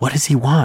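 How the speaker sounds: frightened whisper. A girl among the children asks about the man, in a frightened whisper. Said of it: "a girl whispered in a frightened voice".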